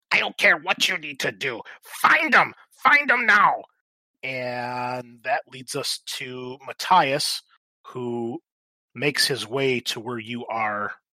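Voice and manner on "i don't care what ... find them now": very high-pitched, shrill, loud goblin shout. Narrating to players, a goblin in the yard orders the others: very high-pitched goblin voice. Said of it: "a very high-pitched goblin voice shout out".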